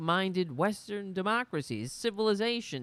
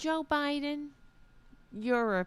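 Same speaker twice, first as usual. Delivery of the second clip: mocking, annoying voice, higher pitched; 8 semitones higher than usual. Imitating a woman who says joe biden is a piece of shit: imitating her annoying voice. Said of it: "I'm actually making her voice sound better".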